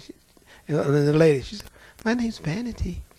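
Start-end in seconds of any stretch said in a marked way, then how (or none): 2.0-3.0 sugary, sweet, demure, innocent-sounding, pitched-up voice. Retelling a demon speaking through a woman: imitating a sweet, demure voice. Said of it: "She sounded just as sweet and demure".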